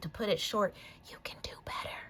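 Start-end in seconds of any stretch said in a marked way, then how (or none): 1.1-2.0 soft, hushed, breathy whisper. During a tarot reading, telling the viewer about the card: whispered. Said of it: "I don't know why I had to whisper that".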